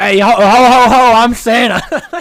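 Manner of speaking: put-on thick New York accent, very loud, booming, slow, drawn out. Recalling a favourite scene from Elf, the dad's Santa line in a thick New York accent. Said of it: "this thick New York accent".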